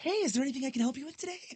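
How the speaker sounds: loud, very high, overly proper customer-service clerk voice. Working at the Dollar Tree, offering help, voice up an octave. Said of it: "your voice goes up an octave".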